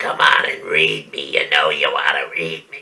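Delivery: creepy put-on voice, pitched very deep. Voicing a book cover showing a silhouette in a doorway: creepy voice. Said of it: "I gotta do that creepy voice because creepy cover, creepy voice".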